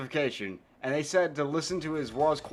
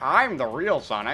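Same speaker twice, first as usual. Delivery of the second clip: put-on frog puppet voice; 4 dB louder than usual. Playing Metal Sonic as Kermit, threatening Sonic: Kermit the Frog voice. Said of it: "Metal Sonic is Kermit".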